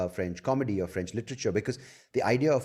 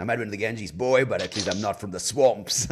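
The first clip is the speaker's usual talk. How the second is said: put-on Southern American accent; 5 dB louder than usual. Speaker acts out a comeback they could have made, in a Southern American accent. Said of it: "in a Southern American accent".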